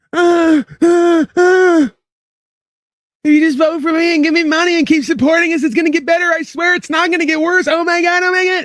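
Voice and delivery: desperate, halting, begging voice. Mocking the speaker in the clip just played: imitating a desperate voice. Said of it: "you hear the desperation in this fucking coward's voice?".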